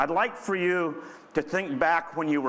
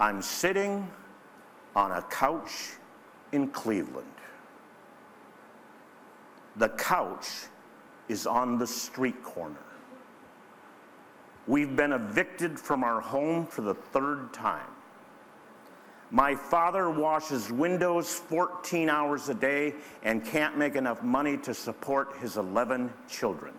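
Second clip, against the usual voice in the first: uncanny, ghostly, spooky, eerie voice; 2 semitones lower than usual. Retelling what the man in seat three D said, in a spooky monotone. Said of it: "started talking in a kind of spooky monotone".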